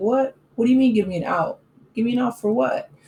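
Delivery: bored, uninterested tone. Retelling how Charles answers when asked about Angela, imitating Charles, mock-uninterested. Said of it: "Like he's just so uninterested".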